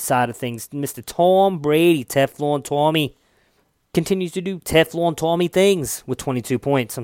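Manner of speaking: horrible put-on New England accent. Speaker recapping the Patriots' win over the Bears: bad New England accent. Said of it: "that's a horrible new england accent".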